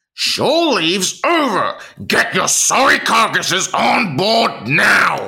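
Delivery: mock furious, harsh, drawn-out angry shout. Doing an impression and asking how harsh it sounds: imitating an angry harsh yell. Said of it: "That's how angry it is".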